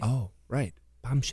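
low, hushed, dropped half-whisper. Asked what her bombshell news is, answering in a half-whisper. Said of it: "I don't know why I'm whispering".

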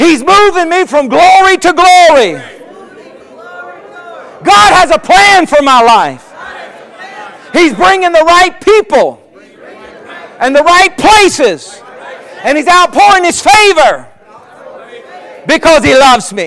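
bold declaration delivery. Leading the congregation in a spoken declaration of faith: bold declaration voice. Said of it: "get your declaration voice".

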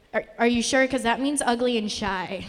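ordinary talk

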